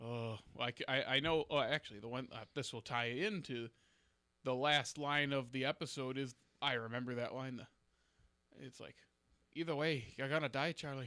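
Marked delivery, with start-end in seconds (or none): 9.5-11.1 fast, best-effort Scottish accent. Asked to do the accent, the speaker quotes an episode's last line, attempting Desmond's accent. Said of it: "Can you do the accent?".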